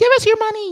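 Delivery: loud, high-pitched squeak. Bringing up a Mickey Mouse to read the comments: Mickey Mouse voice. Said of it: "It's Mickey!".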